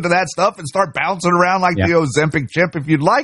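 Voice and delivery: normal talking voice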